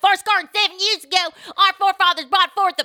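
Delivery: put-on very high, very loud Ozark accent. Joking with friends about an actress, quoting Ruth's Ozark accent. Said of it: "but with that accent".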